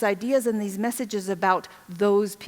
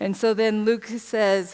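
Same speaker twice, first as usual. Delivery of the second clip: ordinary talk, nothing marked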